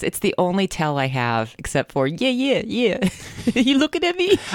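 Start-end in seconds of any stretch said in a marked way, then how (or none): 2.3-4.4 put-on Jersey accent, much higher, slower. Joking in conversation, the speaker suddenly does a new jersey accent. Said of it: "I sounded very Jersey just then".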